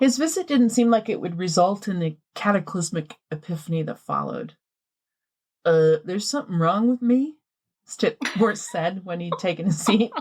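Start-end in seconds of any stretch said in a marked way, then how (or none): 5.6-7.3 put-on Kansas farmer accent. Reading a farmer's lines from a retold story: Kansas farmer accent. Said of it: "I love this accent you chose".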